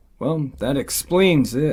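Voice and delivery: ordinary talk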